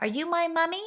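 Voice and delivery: tiny, little, very high doll-like voice. A small walking doll speaks for the first time, in a tiny doll-like voice. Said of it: "in a tiny doll like voice".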